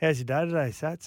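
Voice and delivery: imitated laid-back drawling voice. Retelling what the producer asked, imitating Daddy Vass, laid back. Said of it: "And he talks like that".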